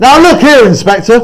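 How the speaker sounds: very high, loud, sudden angry voice. Director shows actors how to interrupt the inspector, angry. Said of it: "So you're angry, right?".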